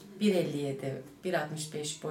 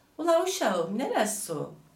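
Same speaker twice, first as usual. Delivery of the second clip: put-on loud, high regional Turkish dialect; 7 semitones higher, 5 dB louder than usual. Asked to show a dialect, the performer does a regional Turkish dialect. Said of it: "Şive".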